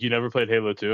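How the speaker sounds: ordinary talk, nothing marked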